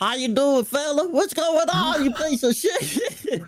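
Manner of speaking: very high-pitched, put-on country accent. Asked to show their country accent on the spot, doing a country accent. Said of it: "let me hear your country accent".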